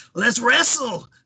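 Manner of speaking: high put-on voice of the old wrestler. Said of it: "you can tell it's Taker".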